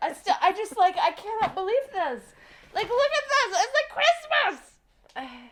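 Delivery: very high, thrilled, swooping, drawn-out excited shouting. Showing a co-host boxes of stuff for an unboxing video, shouting excitedly. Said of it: "I am shouting because I'm so excited".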